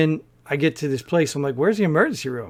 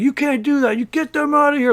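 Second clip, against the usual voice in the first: very high, angry yelling; 10 semitones higher than usual. Retelling how a man in a lobby yelled at the speaker, imitating someone yelling. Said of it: "Like he's yelling at me".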